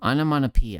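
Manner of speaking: speaking through the nose. Demonstrating two ways of saying the same word, speaking through the nose. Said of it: "the first one was me speaking through my nose".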